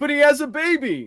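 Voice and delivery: shrill, loud, badly overacted, hammy exclamation. Retelling a bad movie line exactly as the actor delivered it. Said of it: "that's the exact line delivery".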